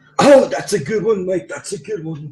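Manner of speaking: put-on English accent with voice pushed very high. Retelling an argument, voicing the other person's reply in an English accent. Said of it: "he acquired an English accent".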